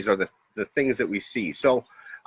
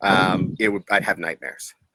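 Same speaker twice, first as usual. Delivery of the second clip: normal talking voice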